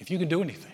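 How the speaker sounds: put-on desperate, pleading voice. Retelling a father's plea to Jesus for his son: imitating a desperate father. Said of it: "you can hear the desperation in the father".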